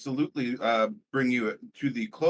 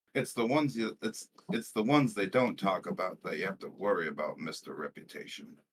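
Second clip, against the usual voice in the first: quiet muttered whisper, much lower; 5 semitones lower, 6 dB quieter than usual. Player retells what they said to Mister Reputation, whispering under breath. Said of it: "I say that like just like whispering under my breath".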